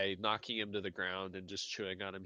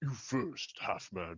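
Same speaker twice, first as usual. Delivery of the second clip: broken, halting creature speech. Game master voicing a creature speaking to a player's character, in broken Common. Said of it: "sort of broken common says".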